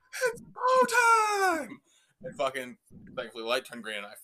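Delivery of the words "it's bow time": very high, very loud, shrill booming scream. Retelling how a man leaned out of a car window at strangers, retelling a scream. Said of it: "screams into their window".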